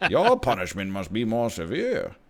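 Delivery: crotchety supervillain voice. Showing the other speaker a Bane impression: Bane impression. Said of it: "my Bane impression".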